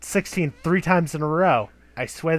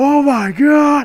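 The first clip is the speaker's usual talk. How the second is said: shrieking scream, very high and very loud; 10 semitones higher, 9 dB louder than usual. Game master acts out a player's character as a book sinks into their flesh, screaming. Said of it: "You're standing there screaming like".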